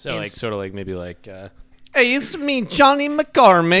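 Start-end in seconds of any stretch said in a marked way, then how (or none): 1.9-3.8 shrill, booming, very loud, high-pitched generic European accent. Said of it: "sound like I'm from somewhere in Europe".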